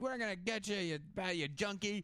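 acted-out street thug shouting voice. Retelling how some guys yelled at a girl's dad in an alley, retelling a shout. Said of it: "they're yelling at him like".

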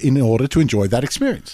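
normal talking voice

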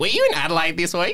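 high questioning tone. Retelling what their date asked them: impersonating their date's tone. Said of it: "just like doing impersonations".

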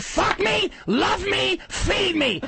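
seductive, sultry voice, very slow and drawn out. Mocking the voice the other person uses for their husband, mock sexy voice. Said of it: "The voice you use for your husband when you're turning him on".

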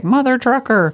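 robot voice pitched way up. Joking about how funny a cussing robot sounds, say it in a robot voice. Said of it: "to have a robot be like".

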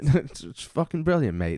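put-on Cockney accent. Teasing the other speaker about their accent, in a put-on Cockney accent. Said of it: "It's a Cockney thing".

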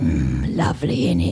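sudden very low voice, close to the ear. Retelling a street performer dressed as an imp speaking in the ear: imitating a living statue in my ear. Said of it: "in my ear, as I'm taking a picture, I hear this".

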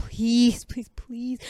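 mock urgent, desperate imploring plea, repeated. Retelling a plea from a Greek story character: acting out begging. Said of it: "he was like begging".

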